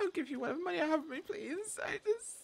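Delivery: soft, tearful pleading through tears. A captive being taken into the woods begs his captors, crying. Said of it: "Stop crying".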